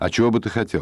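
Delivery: plain reading voice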